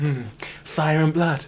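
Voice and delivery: flat, thrown-away delivery with the punch dropped. Imitating a TV character's dramatic line, imitating Varys. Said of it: "he'll say something like".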